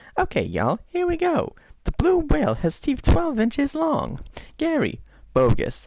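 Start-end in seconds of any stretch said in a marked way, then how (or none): 0.8-4.1 very high squirrely voice. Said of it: "Okay, Squirrely".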